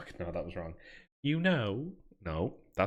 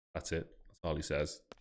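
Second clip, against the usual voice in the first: ordinary talk, nothing marked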